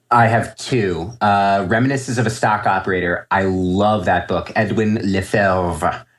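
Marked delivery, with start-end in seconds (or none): 4.5-6.0 tentative, attempted French pronunciation of a surname. Recommending a trading book, saying the author's name in an attempted french accent. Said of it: "that's my attempt at a French accent".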